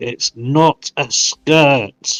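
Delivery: very drawn out, forced through clenched teeth. Conceding a point to the others at the table: through gritted teeth. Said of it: "I will say through gritted teeth".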